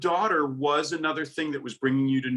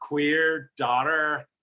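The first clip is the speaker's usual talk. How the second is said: strongly curled, hooked pirate-like r sound. Showing the other speaker how to say the phrase, hooked R sound. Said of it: "you're almost like hooking on the R".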